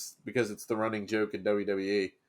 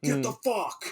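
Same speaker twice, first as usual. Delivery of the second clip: put-on sudden yell, thin, sharp, high, mild; 5 semitones higher than usual. Retelling how a wrestler screamed at people: imitating Moxley screaming. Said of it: "he screamed, like".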